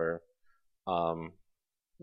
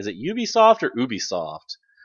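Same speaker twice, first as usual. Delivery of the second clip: normal talking voice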